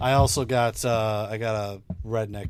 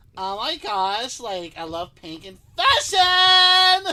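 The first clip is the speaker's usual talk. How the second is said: put-on very high, drawn-out, sing-song Valley girl voice, "fashion" stretched; 5 dB louder than usual. Doing a voice character, a stereotypical Valley girl: Sally Falsax, Valley girl voice. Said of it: "Your stereotypical Valley girl".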